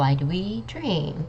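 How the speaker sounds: exaggerated rise-fall pitch tune on dream. Teaching English question intonation: rise then fall on dream. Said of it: "it has a rising and a falling intonation".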